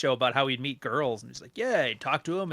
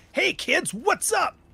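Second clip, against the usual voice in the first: way too excited, very high, very slow, drawn out; 3 dB louder than usual. Mocking Minecraft video intros that start off way too excited. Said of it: "way too excited".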